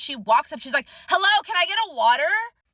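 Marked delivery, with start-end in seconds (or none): 1.1-2.3 play-acted rude, pushy customer voice, pitched up. Retelling how a customer interrupted for a water: imitating a customer screaming. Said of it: "Why the fuck are you screaming at my barista".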